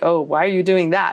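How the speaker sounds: mock condescending, looking-down tone. Retelling how some people look down on automating: imitating people looking down on you. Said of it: "some people look down on you like".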